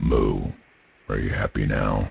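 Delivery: deep, booming male creature voice. Showing how a male tauren character in a game sounds, deep booming voice. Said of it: "So that's what male taurens tend to sound like".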